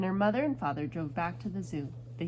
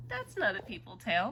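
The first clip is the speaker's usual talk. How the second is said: ordinary delivery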